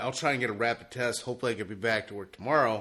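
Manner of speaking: ordinary talk, nothing marked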